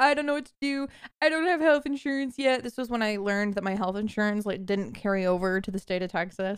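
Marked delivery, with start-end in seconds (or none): 0.0-2.6 put-on tearful crying. Retelling a call to mom about a burst appendix: imitating own crying. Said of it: "I called my mom crying".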